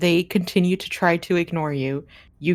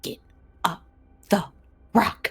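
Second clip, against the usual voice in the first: very hushed, quiet whisper; 2 semitones higher than usual. Narrating a climb, the speaker gives a character's urging at the rock base: hushed whisper. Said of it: "very like hushed whisper".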